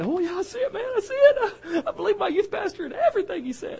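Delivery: high, mocking, fake-eager teenage voice.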